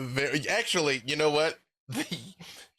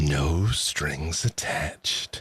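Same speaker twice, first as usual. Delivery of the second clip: echoing put-on character voice, lower in pitch; 8 semitones lower than usual. Voicing Asmodeus speaking in a player's ear: echoing Asmodeus voice. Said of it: "you hear Asmodeus's voice echo in your ear".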